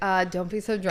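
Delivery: ordinary talk, nothing marked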